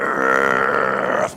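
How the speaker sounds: very deep, loud, guttural death metal growl. Showing how to say a book title: death metal voice. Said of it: "I pronounce it in a death metal voice".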